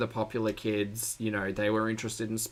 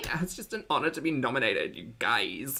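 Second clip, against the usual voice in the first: mock Valley Girl speech, put-on accent; 3 semitones higher than usual. Speaker joking about her nomination, valley girl voice. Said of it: "I can practice my Valley Girl voice".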